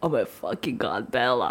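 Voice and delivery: stunned, awestruck, amazed outburst. Retelling being amazed to see Bella Hadid: retelling amazed exclamation. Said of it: "I'm just so amazed to see her".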